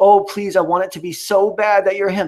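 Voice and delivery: high, pleading, begging tone. Retelling how another person begged someone on a show: imitating someone begging. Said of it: "he was begging".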